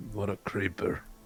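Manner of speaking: very quiet, barely audible mutter under the breath. Playing a character who comments on another character: muttered under the breath. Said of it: "I say under my breath".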